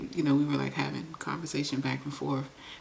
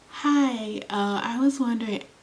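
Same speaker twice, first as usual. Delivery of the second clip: heightened, high, raised, innocent-sounding voice; 9 semitones higher, 5 dB louder than usual. Showing the voice used when trying to get something, heightened high voice. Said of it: "So I started to heighten my voice".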